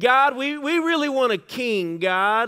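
very slow, high, drawn-out whine. Retelling the nation of Israel asking God for a king: mock-whiny pleading. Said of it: "kind of whiny voice".

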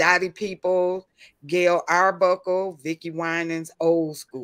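ordinary talk

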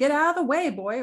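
regal commanding voice. The king, to a boy named Boy standing in the dragon's way: ordering. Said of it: "ordered the king".

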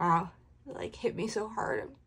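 tearful words spoken through crying. Reacting right after reading the passage aloud, speaking while crying. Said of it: "I'm crying now".

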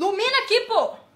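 irritated tone.

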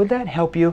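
genuinely interested, curious, inquisitive tone. Sales talk, demonstrating tone on a question: curious tone. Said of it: "That's a curious tone".

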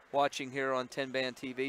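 usual speaking voice

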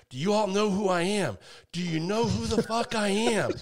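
put-on loud, high-pitched, furious yell. Retelling walking into a restaurant angry about his order: retelling a loud yell. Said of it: "I yell real loud".

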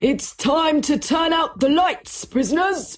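high, loud shouted call. A policeman in the hall calling to the prisoners, shouting. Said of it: "shouted the policeman in the hall".

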